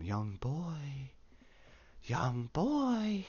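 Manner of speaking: eerie, very drawn-out, slow, swooping calling voice. Retelling a scene where a voice calls to a boy: imitating a weird, creepy voice. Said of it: "it's really weird and creepy".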